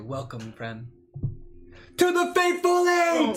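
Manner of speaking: shouting. Greeting a newcomer in character while firing into the air: yelling in character. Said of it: "the yell and the firing".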